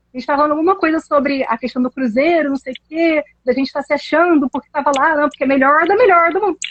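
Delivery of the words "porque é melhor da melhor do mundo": natural regional Portuguese accent, pitched up. Speaker repeats her own phrase to show how she talks, regional accent. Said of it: "eu só consigo falar com esse sotaque".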